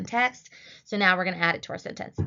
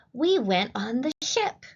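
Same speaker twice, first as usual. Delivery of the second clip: excited, pitched-up, exclamatory reading; 5 semitones higher than usual. Speaker demonstrates how to read a practice sentence aloud, excited and exclamatory. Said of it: "say it like you're excited".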